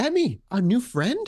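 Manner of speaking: high, slow, pleasant, welcoming voice. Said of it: "as always, with a pleasant smile, she's like".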